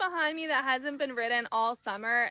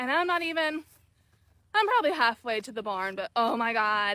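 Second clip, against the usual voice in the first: talking while winded and short of breath; 4 dB louder than usual. Walking uphill toward the barn, halfway there, out of breath. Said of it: "And I am out of breath".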